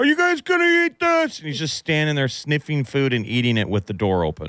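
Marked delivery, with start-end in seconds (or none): 0.0-1.4 very high-pitched, yelled hollering. Retelling Dad at the open fridge asking about food: imitating Dad yelling. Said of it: "You'd hear him yelling".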